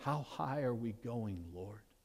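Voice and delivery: frightened voice. Imagining walking over to Jesus and asking the Lord, fearful voice. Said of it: "And in a fearful voice".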